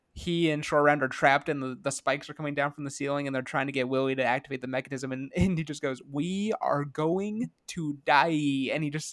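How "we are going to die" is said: over-the-top, exaggerated, very slow, drawn-out delivery. Recalling a favorite movie scene, the speaker quotes a trapped character: retelling an exaggerated line. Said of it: "says it in such a exaggerated way".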